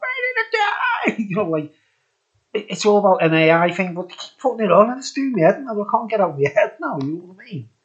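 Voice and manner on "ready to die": female AI voice, bird-like, squealing. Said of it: "change it to a female voice and you hear a bird going".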